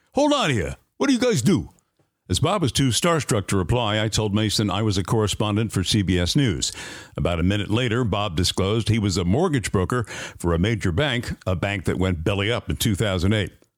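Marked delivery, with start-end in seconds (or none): 0.1-1.7 put-on heavy New York accent. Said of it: "in that thick New York accent".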